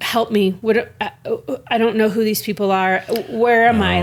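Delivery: bewildered, disoriented, confused and lost tone. Retelling a parent's words during a video call: imitating someone confused. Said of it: "got real, like, confused, was like".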